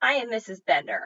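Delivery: ordinary delivery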